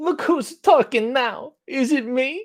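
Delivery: drawn-out movie-star drawl. Responding to a comment, speaker tries another John Travolta voice. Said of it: "my Travolta impression. How about this?".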